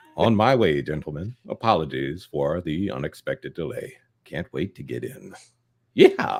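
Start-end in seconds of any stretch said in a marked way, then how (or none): 0.2-5.4 deep narrator voice. Rereading a donation message aloud on request in Morgan Freeman voice. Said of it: "can you read it as, ... as Morgan Freeman".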